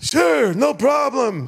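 put-on high, elderly grandpa voice.

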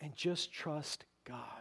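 hushed whisper, slowed right down.

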